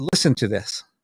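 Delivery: ordinary delivery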